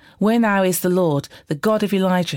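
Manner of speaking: ordinary delivery, nothing marked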